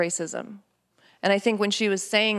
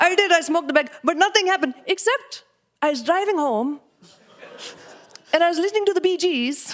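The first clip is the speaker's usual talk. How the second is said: put-on Indian accent, pitched very high; 10 semitones higher, 4 dB louder than usual. Retelling what dad said about trying marijuana, imitating dad's Indian accent. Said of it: "I could only ever talk about my dad with his accent".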